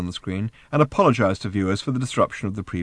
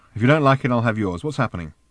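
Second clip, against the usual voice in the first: plain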